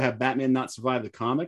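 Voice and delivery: ordinary delivery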